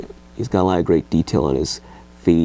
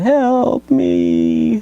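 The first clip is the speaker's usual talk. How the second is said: very high, swooping, mournful, pitiful zombie voice; 4 dB louder than usual. Showing a zombie toy and imitating what it says: mournful, pitiful zombie voice. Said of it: "he sounds really mournful and pitiful".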